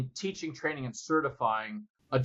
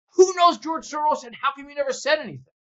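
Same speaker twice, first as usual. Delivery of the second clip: very high, fast, shrill scream; 12 semitones higher, 8 dB louder than usual. Speaker retells someone in a dead-quiet room, retelling someone screaming out. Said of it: "Somebody screams out".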